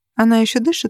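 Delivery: ordinary delivery, nothing marked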